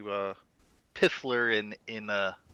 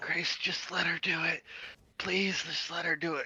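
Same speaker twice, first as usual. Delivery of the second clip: soft, quiet half-whispered voice; 8 semitones higher, 4 dB quieter than usual. Player's character urges Grace to let her handle the animal: kind of whispering. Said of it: "kind of whisper".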